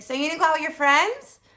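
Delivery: rapid-fire, very loud voice. Retelling a conversation about the speaker's birthday, doing the mother voice. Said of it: "I'm going to do the mother voice".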